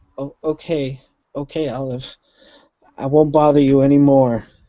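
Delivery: very small, meek, sheepish voice. Storyteller voicing a character backing down to olive, in a very small, sheepish voice. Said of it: "he says in a very small, sheepish voice".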